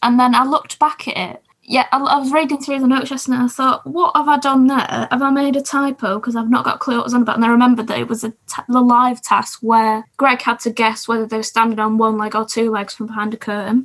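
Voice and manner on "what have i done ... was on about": ordinary talk, nothing marked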